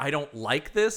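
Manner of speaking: put-on pissed-off, angry voice. Retelling a movie girlfriend's complaint: imitating someone pissed off. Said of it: "she's all pissed".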